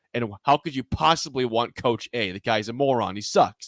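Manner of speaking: normal talking voice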